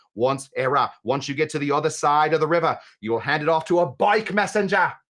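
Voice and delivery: accent gradually slipping toward Australian. Giving step-by-step instructions to Era, slipping into an Australian accent. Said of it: "gone Australian".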